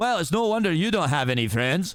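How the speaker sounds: put-on fierce, aggressive Scottish accent. Reading a script aloud, the character tells Donkey off, aggressive Scottish accent. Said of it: "one aggressive, like, Scottish accent".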